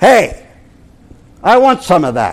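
put-on northern New Jersey accent. A preacher retells a woman's reply to his preaching, in her northern new jersey accent. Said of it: "in her northern New Jersey accent".

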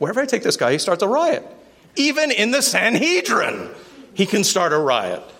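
high, exasperated commander voice.

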